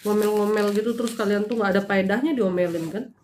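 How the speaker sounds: normal talking voice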